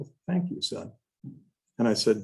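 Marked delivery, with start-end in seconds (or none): 0.0-0.9 mild, soft-spoken, slightly high man's voice. Retelling how a man thanked him after his remark, imitating a soft-spoken man. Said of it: "he's very soft-spoken".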